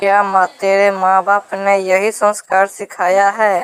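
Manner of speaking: usual speaking voice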